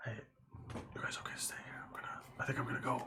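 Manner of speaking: hushed whisper. Taking the others aside in character to quietly check in: whispering to the group. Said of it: "have a little bit of a whisper".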